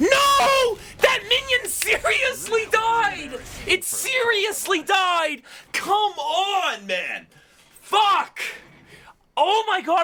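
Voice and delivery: tilted, high, drawn-out, exasperated, aggravated ranting. Reacting as a minion seriously died: tilted frustration. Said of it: "I'm getting tilted".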